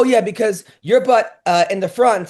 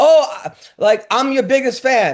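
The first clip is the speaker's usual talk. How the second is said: heavy, thick put-on Latin American accent; 6 semitones higher than usual. Retelling what an audience member who calls herself a fan said, in a thick accent. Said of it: "I hear in a thick accent".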